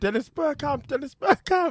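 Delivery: high, mock commentator scream.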